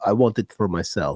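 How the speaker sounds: put-on Russian accent. Acting out his answer to ChatGPT's collab request, Elon impression, Russian accent. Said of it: "with your Russian accent".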